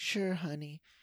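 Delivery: put-on soft, high, gentle, adorable New York accent. Recapping a movie scene, the speaker quotes a woman's reply: soft gentle new york accent. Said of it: "she's like soft-spoken, but she has a gentle, adorable New York accent".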